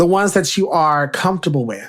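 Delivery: ordinary talk, nothing marked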